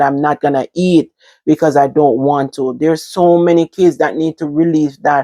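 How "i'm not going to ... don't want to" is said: normal talking voice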